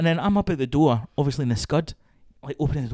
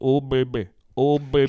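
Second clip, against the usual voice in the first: put-on flat monotone 'oh baby', no pitch movement, deadpan. Describing a woman's dull delivery, the speaker imitates her in a flat monotone. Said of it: "no tonal move in the voice".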